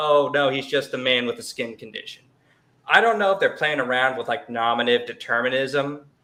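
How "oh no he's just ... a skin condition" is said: ordinary delivery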